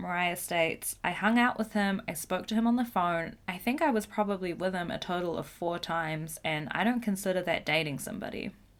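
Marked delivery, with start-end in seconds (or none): none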